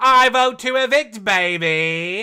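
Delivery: put-on very loud, slow groovy spy voice, 'baby' stretched. Describing how she voted to evict, the speaker does an Austin Powers impression. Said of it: "I now cannot think of anything other than Austin Powers".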